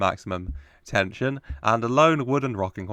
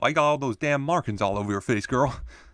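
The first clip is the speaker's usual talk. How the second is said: put-on attempt at an American accent; 4 semitones higher than usual. Retelling what CD3 said to her, in an attempted American accent. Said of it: "That's as good as I'm going to get to an American accent".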